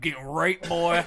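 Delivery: very loud put-on slack-jawed hillbilly voice. Acting out a line in a slack-jaw yokel voice. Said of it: "I did my best slack jaw yokel voice".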